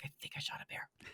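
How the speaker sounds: very quiet hushed whisper. Speaker retells what she said to the listener's dad at the dock, whispering. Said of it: "I just whispered to your dad".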